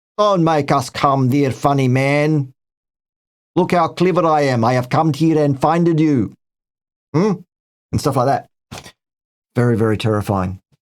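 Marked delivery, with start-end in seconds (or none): 0.2-6.4 put-on threatening Eastern European accent. Describing what a visitor will say on arrival, put-on Eastern European accent. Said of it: "he will put on a Eastern European accent".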